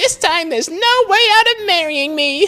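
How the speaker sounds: put-on very high-pitched Valley Girl accent. Voice-acting game dialogue as Amy: Amy voice with Valley Girl accent. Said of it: "a Valley Girl accent in this era".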